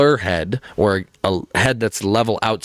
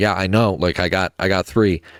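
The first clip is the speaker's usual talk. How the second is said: mock dismissive, indifferent, don't-care tone; 2 semitones lower than usual. Retelling a player's reply to the coach's foul warning: imitating a dismissive don't-care tone. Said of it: "in the most, like, "I don't give a fuck".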